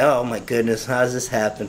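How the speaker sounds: usual speaking voice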